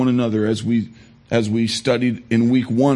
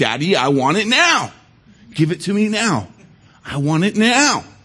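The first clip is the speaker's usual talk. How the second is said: annoying, squeaky, pitched-up high voice; 8 semitones higher than usual. Quoting a self-centered girl from a film, in a squeaky Veruca Salt voice. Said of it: "Her annoying, squeaky voice saying".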